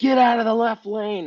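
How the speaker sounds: hollered, yelled out. Retelling a race, calling to runners on the course: imitating own yelling. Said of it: "I kept yelling at people like".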